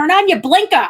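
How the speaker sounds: put-on Boston accent. Retelling telling a driver ahead off, put-on Boston accent. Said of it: "That's my Rhode Island about Boston".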